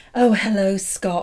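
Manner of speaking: put-on womanly, voluptuous voice. Retelling greeting Scott, hoping he would want her, putting on a womanly, voluptuous voice. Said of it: "I tried to be like womanly and voluptuous".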